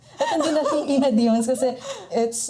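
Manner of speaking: high, loud laughing.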